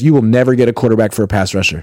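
ordinary talk

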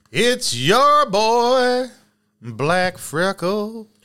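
put-on country accent, high, very slow, "boy" stretched out. Opening the show, the host introduces himself to listeners: country accent. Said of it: "I kind of did it with like a country accent".

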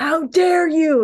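loud, high-pitched, outraged yell. Retelling how a guy snapped and stood over a woman, reenacted yelling. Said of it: "he was yelling like".

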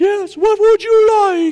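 very high, horrible, badly done phone-assistant voice. Talking about phone directions, the speaker does a horrible Siri impression. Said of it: "I'm a horrible Siri".

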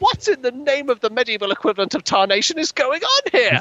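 very high, loud shout. Retelling a dragon tamer's line from an episode: imitating a shout. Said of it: "he sort of comes out and just shouts".

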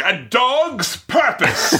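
very angry, high, swooping English or Irish accent. Showing how a phrase sounds in their head, very angry english or irish voice. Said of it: "in either a very angry English or Irish voice".

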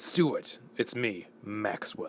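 sinister, menacing, scheming cartoon-villain voice. Voicing a phone message from Maxwell to Stuart, villainous Maxwell voice. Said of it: "Don't know why I said that so villainously".

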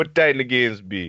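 put-on Jamaican accent. Retelling a teammate asking when the games start: imitating Papa Reds, Jamaican accent. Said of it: "he was this Jamaican guy".

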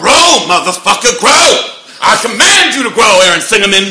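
shrill, very loud, high-pitched full-volume roar. Asked to do the impression for the skit: C T Fletcher impression. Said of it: "I do C T Fletcher quite a bit".

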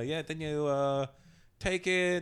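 put-on Hong Kong English accent. Retelling what a man in a store said: imitating a Hong Kong man in a store. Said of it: "I heard some guy talking".

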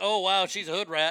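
plain

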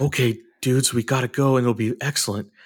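low, deep, dead-serious action-hero tone. Imitating an actor saying silly lines in a movie: Keanu Reeves deep serious voice. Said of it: "it's that voice, but saying".

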